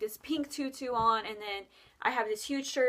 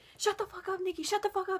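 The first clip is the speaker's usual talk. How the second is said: mock mad outburst, pitched up and angry; 9 semitones higher than usual. Retelling how the sister got mad at a strange remark: imitating an angry sister. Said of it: "my sister got so mad at me".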